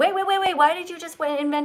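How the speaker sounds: put-on upset small child voice, high. Coaching someone reading aloud, the speaker voices their five-year-old self: imitating upset five-year-old. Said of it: "Pretend you're reading to a five-year-old you".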